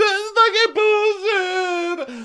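crying through sobs, pitched way up, slow and drawn out. Retelling someone's reaction on walking into a friend's room, imitating someone sobbing.

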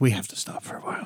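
soft, low, weary whisper.

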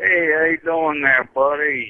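put-on, fake Bronx accent. Calling in to a radio show and greeting the host: put-on Bronx accent. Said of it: "Kinda sounds like Tommy from the Bronx".

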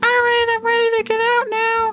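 squeaky, very high, tiny little voice. Showing how a tiny husband's voice sounds to his wife, high tiny voice. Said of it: "you have a high voice because you're all tiny".

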